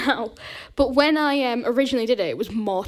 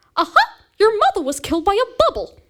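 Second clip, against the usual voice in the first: very high, loud, bright, squeaky voice; 9 semitones higher, 6 dB louder than usual. Allowed only one sentence, the speaker delivers it in a Mickey Mouse voice. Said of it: "that animal is Mickey Mouse".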